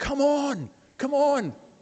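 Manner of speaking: put-on broad Scottish accent, very slow drawl. Retelling a boy's reaction to hearing about heaven: imitating a broad scottish accent. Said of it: "He had a broad Scottish accent".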